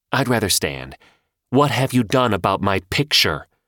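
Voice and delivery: brusque, curt, short tone. Reading a woman's reply after being invited to take a seat, curt.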